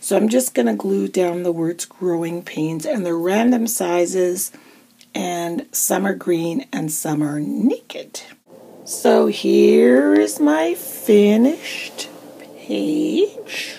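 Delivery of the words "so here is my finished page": very slow, high, deliberate, drawn-out delivery. Presenting a finished journal page, talking very slowly. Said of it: "I don't know why I talk that slow".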